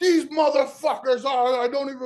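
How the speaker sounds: high, screaming outburst with swearing. Telling a story about older reenactors, re-enact your own past screaming. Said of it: "I'm cussing and screaming".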